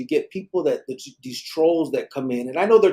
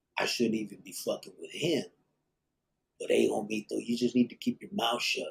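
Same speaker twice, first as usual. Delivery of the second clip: very quiet, half-whispered aside; 5 semitones lower, 10 dB quieter than usual. Retelling how a man on camera warned him: imitating someone half-whispering. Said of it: "he whispers in the fucking camera".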